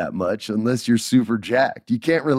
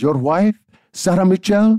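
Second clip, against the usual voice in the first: put-on heavy, thick Puerto Rican accent, high; 9 semitones higher, 5 dB louder than usual. Act out your upset grandmother on the phone, in Grandma Mary's heavy Puerto Rican accent. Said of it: "she has this heavy Puerto Rican accent".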